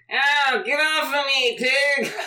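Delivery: very high, loud, slow, drawn-out voice. Voicing a shapeshifter who takes George's form, sitting on the ground: imitating George. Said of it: "he looks like George, and he sits on the ground, and he says".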